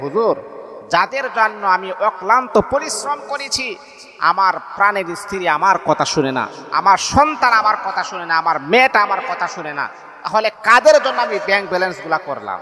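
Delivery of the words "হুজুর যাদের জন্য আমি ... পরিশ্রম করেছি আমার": plain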